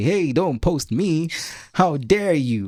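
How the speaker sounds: slow, high, drawn-out mock indignation.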